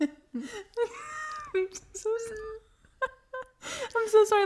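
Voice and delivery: very high, very slow, speaking through laughter. Apologizing to listeners for a laughing fit: laughing while apologizing. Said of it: "let me explain why we're laughing".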